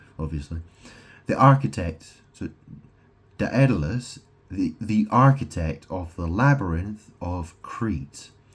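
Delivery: ordinary delivery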